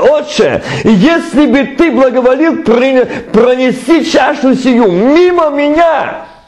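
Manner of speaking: victorious, ceremonial delivery. Reading a line aloud as an exclamation, not a question: solemn triumphant exclamation. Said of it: "восклицание, торжественно, победоносно".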